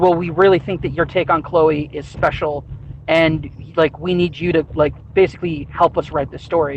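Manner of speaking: ordinary talk, nothing marked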